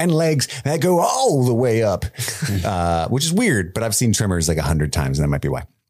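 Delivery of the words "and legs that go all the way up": barked-out delivery. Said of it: "And he goes".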